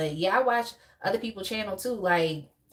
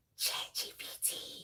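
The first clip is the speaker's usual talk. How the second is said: very quiet, very slow, hushed voiceover-style whisper. Telling live viewers about AI ads, imitating an ad's whisper. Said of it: "the whispering part be like".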